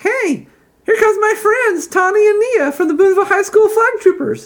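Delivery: voice pitched very high. After putting down two giggling kids before a crowd, he speaks in a high-pitched voice. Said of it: "then says in a high-pitched voice".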